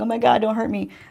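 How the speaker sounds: sobbing, tearful, crying, pleading voice. Retelling a scene where the girl sits on the floor: imitating a girl crying.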